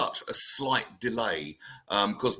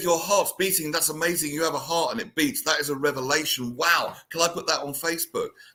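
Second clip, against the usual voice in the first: petty, dry sarcasm with feigned amazement; 6 semitones higher than usual. Retelling own reply to people obsessed with everything they do: retelling own sarcastic reply. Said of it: "I can get quite sarcastic about it".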